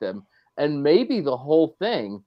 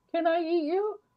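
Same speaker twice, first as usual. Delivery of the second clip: put-on very high, pleading little-girl voice.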